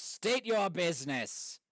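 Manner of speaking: loud, booming, bellowing voice. Narrating to players, voicing someone calling from the watchtowers, loud bellowing voice. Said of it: "a loud bellowing voice being like".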